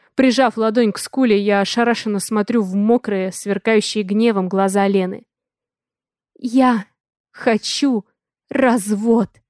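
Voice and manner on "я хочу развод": hoarse, raspy, husky voice. Narrator voices the wife demanding a divorce right after slapping her husband; hoarse. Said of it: "Хрипло произносит она".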